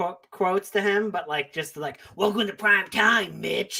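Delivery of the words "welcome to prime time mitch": delivered like a sinister horror villain. Quote a changed one-liner at your roommate Mitch in a Freddy Krueger voice. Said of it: "I would just do like Freddy Krueger one-liners".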